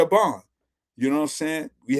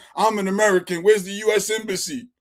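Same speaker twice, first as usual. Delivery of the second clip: put-on hollering, loud and proud, from the chest; 6 semitones higher than usual. Acting out a traveler in trouble abroad: imitating someone hollering. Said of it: "the first thing you gonna holler is".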